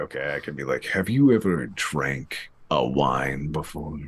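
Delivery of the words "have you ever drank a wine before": smooth announcer voice-over, ad-style read. Offered voice work for the other speaker's business, showing a commercial voice-over voice. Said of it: "do some voice work for my business".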